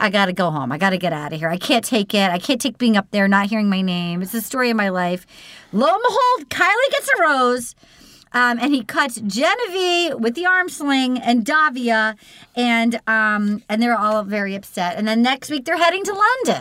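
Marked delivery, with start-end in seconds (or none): 0.0-5.3 mock frantic, fast, spiraling panicked babble. Retelling what she said after crying, imitating someone panicking. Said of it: "she starts panicking, and she's like".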